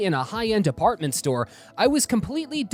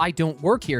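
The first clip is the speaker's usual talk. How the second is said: normal talking voice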